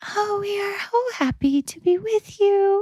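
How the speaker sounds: very high, airy, breath-filled voice. The speaker imitates how someone sounded: high-pitched breathy voice. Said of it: "It was just high pitched and like breathy".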